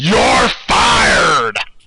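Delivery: mock wrestling boss shouting. Suggesting how another speaker should announce a disqualification: Vince McMahon voice. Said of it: "in your Vince McMahon voice".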